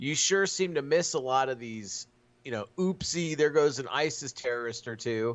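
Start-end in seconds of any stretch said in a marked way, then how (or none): none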